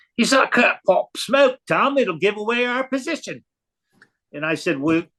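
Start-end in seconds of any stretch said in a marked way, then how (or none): 0.2-3.5 put-on comical Australian accent, pitched up. Retelling what he said when asked to pop smoke, in a comical Aussie accent. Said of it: "he says in this comical Aussie accent".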